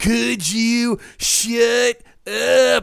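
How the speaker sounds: very slow, gruff, drawn-out South Texas drawl. Quoting a film line: Kevin Bacon gruff South Texas accent. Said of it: "he's doing this weird kinda South Texas accent".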